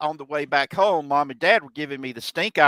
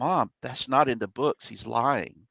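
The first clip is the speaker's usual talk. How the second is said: whispering; 2 semitones lower, 4 dB quieter than usual. Retelling whispering to her mom while a man gave his spiel: retelling a whisper. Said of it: "as I was whispering this into my mom's ear".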